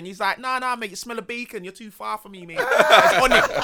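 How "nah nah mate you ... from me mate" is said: put-on Birmingham brummie accent, higher pitch. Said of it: "man's got that accent".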